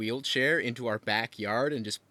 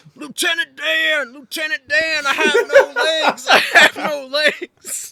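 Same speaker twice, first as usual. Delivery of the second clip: put-on drunken yell, much higher, louder; 14 dB louder than usual. Telling a story about a drunk man in a wheelchair, retelling a drunk man's yell. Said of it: "and he's yelling".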